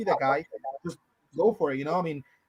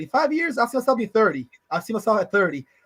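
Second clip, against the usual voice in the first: sarcastic, smart-ass delivery. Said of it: "I was being sarcastic, being a smart ass".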